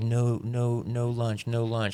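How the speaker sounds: very slow, sobbing, acted-out little-kid crying voice. Retelling a toddler refusing to stay for lunch: imitating Emerson crying. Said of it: "crying 'cause he didn't, he's like".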